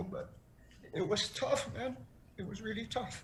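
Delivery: emotional, choking up, voice catching. A guest on the show apologizes while recounting a tough experience: choking up, emotional. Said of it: "I'm very sorry I'm being emotional".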